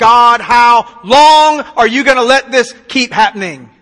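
loud, anguished, angst-filled cry. Speaker telling listeners about overwhelming times in life: acting out crying out to heaven. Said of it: "you just cry out to heaven and you go".

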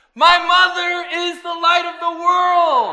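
ringing, very loud, very high, clear, heartfelt voice. Retelling a child proudly saying his line: imitating a loud, clear voice with great feeling. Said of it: "with great feeling and a loud, clear voice".

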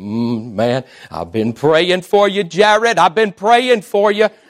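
put-on New Jersey accent, drawn-out male voice. Retelling what a man from New Jersey told him, in a New Jersey accent. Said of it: "I don't know if that was a good accent or not".

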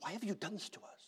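intense, hushed, barely voiced whisper. Guessing how someone reacted and acting it out, hushed but intense tones. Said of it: "in hushed but intense tones".

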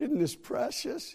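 mock moved, teary, high-pitched welling-up delivery. Retelling what the speaker said to Lori, retelling tearing up. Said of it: "I'm tearing up".

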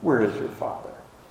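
acted scornful, contemptuous, derisive mocking tone. Reading aloud the Pharisees' question to Jesus, imitating a scornful question. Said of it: "with scorn in their voice".

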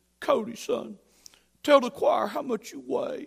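put-on proper man voice. Recalling how he spoke to you at choir practice, do a very proper Earl Holloway voice. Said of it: "he was very proper, And he talked like this".

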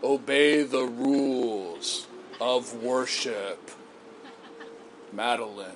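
very slow, deep, bassy, self-righteous voice. Mocking a rule-bound view of worship, dropped bassy pharisaical voice. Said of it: "drop your voice a little bit so it sounds kind of bassy and, you know, pharisaical".

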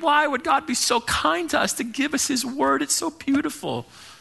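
put-on tearful, very high, sobbing, weeping voice. Retelling a woman's reaction to reading the Bible, imitating someone weeping. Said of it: "she's just weeping like".

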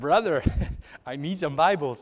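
laid-on put-on Indian accent. Retelling a missionary's phone call to the ministry, in a put-on indian accent. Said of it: "every accent i have is an indian accent".

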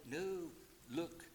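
imitated whisper. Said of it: "like he whispered to Eve".

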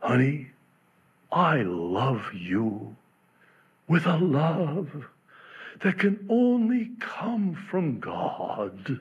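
play-acted proud, very godly, pious tone, slow. Retelling what he said to his wife, in a put-on very godly tone. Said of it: "in a very godly tone".

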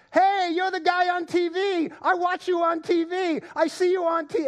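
very high yell. Retelling a stranger running across a store yelling at them; imitating someone yelling. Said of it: "comes running across the store yelling out".

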